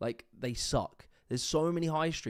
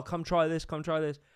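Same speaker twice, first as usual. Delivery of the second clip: imitated shouting, higher; 4 semitones higher than usual. Retelling how people on the high street called out: imitating people shouting. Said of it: "they're shouting, like".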